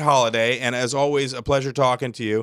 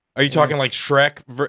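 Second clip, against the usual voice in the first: plain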